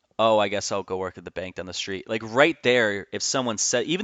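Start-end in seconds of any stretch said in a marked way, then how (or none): 0.3-2.1 mock flat, defeated, deflated voice. Imitating the way the other speaker said it: imitating a flat, defeated tone. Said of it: "the way you said it".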